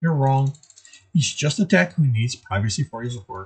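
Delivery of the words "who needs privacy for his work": ordinary delivery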